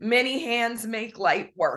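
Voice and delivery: ordinary talk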